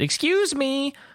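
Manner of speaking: put-on very high, pushy, almost rude little girl voice. Voicing a small girl calling to the party: insistent small girl voice. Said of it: "in a very kind of insisting and, uh, maybe almost persistent or rude tone".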